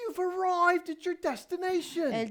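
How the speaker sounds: happy, cheerful British sat-nav announcer voice. Imitating the GPS voice announcing arrival, in a cheerful British accent. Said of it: "So I went for the British accent because she's always happy".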